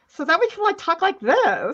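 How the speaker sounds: put-on teenage girl voice. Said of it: "do a stream as Teenage Kat and Teenage Clara".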